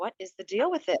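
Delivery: ordinary talk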